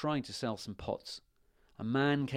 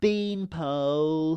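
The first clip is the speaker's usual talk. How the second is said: loud, laughing, rude mocking jeer; 4 semitones higher, 6 dB louder than usual. Reading a fairy tale aloud, a rude princess judges a prince: laughing at him. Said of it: "and she laughed at him".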